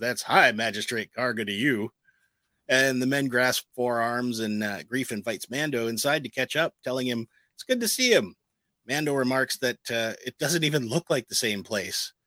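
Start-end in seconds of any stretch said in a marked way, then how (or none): 0.0-1.9 character voice with a chuckle. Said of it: "he chuckles and says".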